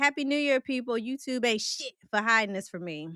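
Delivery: normal talking voice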